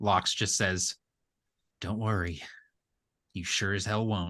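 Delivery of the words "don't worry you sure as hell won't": muttered under breath, much quieter. As the highwayman rides away, Locks answers him, muttered under his breath. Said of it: "under his breath".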